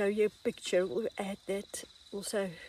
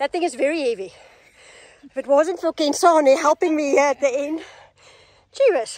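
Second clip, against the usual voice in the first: very loud, winded and out of breath; 6 semitones higher, 15 dB louder than usual. Just after carrying a very heavy plant with help, speaking out of breath. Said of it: "I'm still out of breath".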